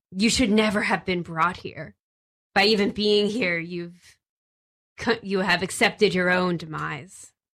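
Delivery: hissing voice. A voice speaks telepathically into the listeners' minds: hissing telepathic voice. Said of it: "In this like hissing voice that you all understand, / In this like hissing voice that you all understand, / you hear this voice enter your brains. So it's speaking telepathically".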